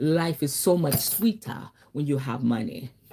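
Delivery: put-on Nigerian accent, low and soft. Quoting her boyfriend's saying the way he said it, Nigerian accent. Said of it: "his Nigerian voice".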